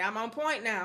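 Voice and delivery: ordinary talk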